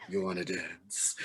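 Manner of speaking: put-on sultry, sexy Nigerian accent, very low, soft, hushed. Retelling Trisha Peck tapping the speaker's shoulder at a dance, in a sexy Nigerian accent. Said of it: "says in that sexy Nigerian accent".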